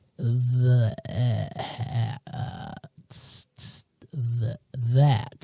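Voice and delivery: very slow, halting, stumbling sounding-out letter by letter. Retelling how a child reads, imitating a child sounding out letters. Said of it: "sound out all of the s-, letters of a word".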